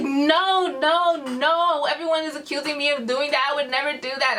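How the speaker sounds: acted, tearful crying voice with drawn-out "no". Retelling a crying friend denying the accusation: imitating someone crying. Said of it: "I find Charlotte and she's crying".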